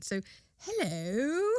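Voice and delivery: quiet, soft put-on British accent. Imagining a coyote answering a man yelling in a field: British accent. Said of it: "but with a British accent".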